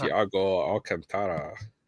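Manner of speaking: Spanish-style lisping accent. Showing how a player's name is said in Spain: Spanish lisp like Daffy Duck. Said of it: "like you're a Daffy Duck if you're from Spain".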